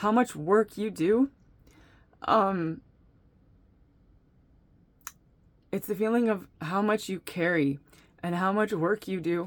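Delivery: voice catching, choked up with emotion. Speaker addressing a listener directly, saying they are getting choked up. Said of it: "that's like choking me up".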